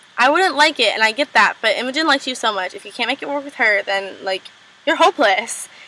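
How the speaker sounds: ordinary delivery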